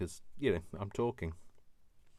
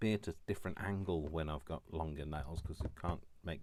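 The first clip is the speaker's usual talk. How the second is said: ordinary talk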